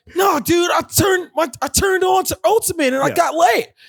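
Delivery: put-on young male voice pushed up very high.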